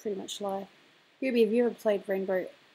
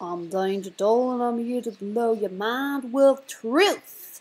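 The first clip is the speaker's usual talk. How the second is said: loud, put-on American character voice; 2 semitones higher, 7 dB louder than usual. Doing a quick demonstration while drawing, trying an impression of Dee Dee. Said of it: "my best impression of Dee Dee".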